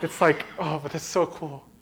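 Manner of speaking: soft voice, held in, fighting back tears. A man telling what happened to him, holding back tears right now. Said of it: "right now I'm trying not to cry".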